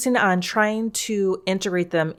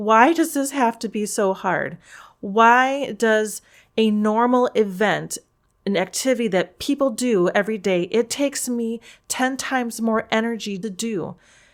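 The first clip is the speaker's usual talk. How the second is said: mock breaking down in tears, pleading, tearful; 3 semitones higher than usual. Recalling having to walk out of a sunday service, retelling own crying. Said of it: "And I was just crying like".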